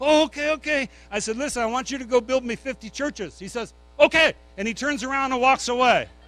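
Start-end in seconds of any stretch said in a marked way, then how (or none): 1.4-3.4 playful, play-acted joking tone. Retelling what he jokingly told a man he wanted for his evangelism, retelling a joking request. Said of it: "And I jokingly".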